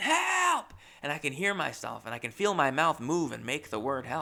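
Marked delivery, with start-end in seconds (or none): 0.0-0.7 high, loud scream as loud as possible. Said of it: "In my mind, in my little world, I'm going".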